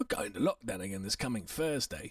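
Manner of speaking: put-on street British accent. Mimicking how a man says a phrase on air: street british accent. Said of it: "that is so British. That's so, like, street Brit".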